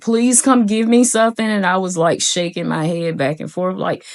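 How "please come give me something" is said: high, begging, pleading scream. Retelling a panic attack in a hospital bed, reenacting their own screaming. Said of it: "I was screaming at the top of my lungs".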